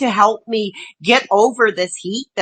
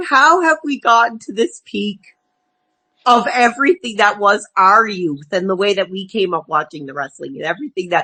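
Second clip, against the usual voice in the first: choked-up voice catching, starting to cry; 2 semitones lower than usual. Talking about the wrestlers of their youth, starting to cry. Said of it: "I am starting to cry".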